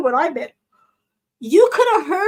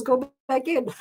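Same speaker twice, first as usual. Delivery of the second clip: plain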